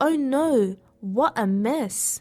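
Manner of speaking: very slow, stretched-out, drawn-out exclamation. She steps in something sticky while walking, exclaiming. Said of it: "she exclaimed".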